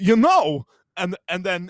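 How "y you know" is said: very loud, high-pitched, belted delivery. Showing the set phrase that kicks into an impression: Christopher Walken voice. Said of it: "with Christopher Walken, you have to do the set phrase".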